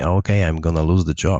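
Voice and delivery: ordinary talk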